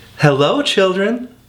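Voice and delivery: sweet, high-pitched, sweetly spoken voice. Reading a story aloud, someone greets the children in a sweet voice. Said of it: "someone said in a sweet voice".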